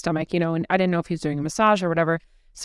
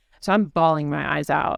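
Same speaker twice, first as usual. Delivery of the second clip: ordinary talk, nothing marked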